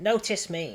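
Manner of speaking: snide, jeering, mocking and sarcastic tone. Reacting to a story about a joke note, mocking tone. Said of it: "I did it in such a mocking".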